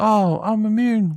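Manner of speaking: put-on, high-pitched, needling shouted line. Retelling how Ellie acted during shooting practice: imitating Ellie shouting. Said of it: "She was shouting".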